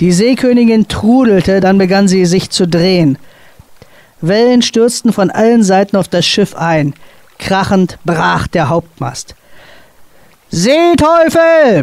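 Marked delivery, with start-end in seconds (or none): 10.5-11.8 high, desperate roaring bellow. As the ship spins and the main mast breaks, the captain is bellowing in desperation. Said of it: "brüllte der Kapitän in höchster Not".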